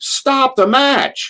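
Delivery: acted, shrill, very high yell. Retelling yelling as the losing wrestler walks out: imitating own past yell. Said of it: "and I'd yell".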